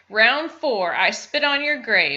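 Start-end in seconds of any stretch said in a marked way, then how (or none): none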